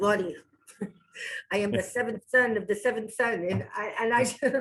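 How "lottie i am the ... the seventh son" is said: put-on thick, heavy old-country accent. Retelling what the speaker's papa would tell them, heavy old-country accent. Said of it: "he had this heavy accent because he came from the old country".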